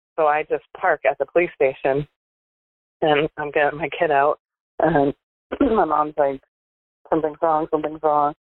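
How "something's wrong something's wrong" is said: ordinary talk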